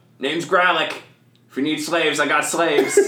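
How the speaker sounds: high-pitched, loud orc voice calling out. The narrator voices an orc calling out to those leaving, Gralik the orc calling out. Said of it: "the orc is going to call out".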